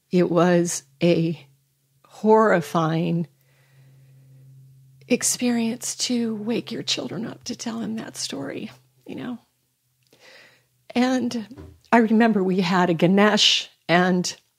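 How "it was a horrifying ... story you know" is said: pushing through words, holding back tears. Recounting the day of that phone call, trying not to cry. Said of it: "I'm going to try to say it without crying".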